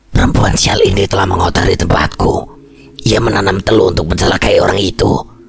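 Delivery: hoarse, angry, enraged voice. A possessed woman answers the man praying over her, in an angry hoarse voice. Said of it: "Geram Mbak Halimah menjawab dengan suara parau".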